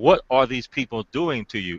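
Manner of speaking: ordinary talk, nothing marked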